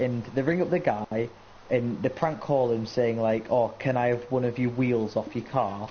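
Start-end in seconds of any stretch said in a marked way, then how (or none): none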